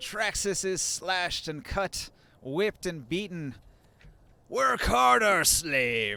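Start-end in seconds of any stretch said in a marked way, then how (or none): 4.5-6.2 rough, gravelly, shouted half-giant voice scream. Narrating a half giant whipping a player's character, in a gravelly half-giant scream. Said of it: "Screams the half giant in his gravelly voice".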